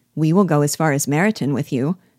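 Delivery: ordinary delivery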